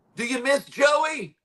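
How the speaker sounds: mock shrill yell, very high pitch. Retelling a stranger yelling at him from twenty feet away: retelling a yell. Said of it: "And then he just yells".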